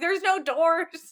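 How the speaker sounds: put-on high, slow alarmed child voice.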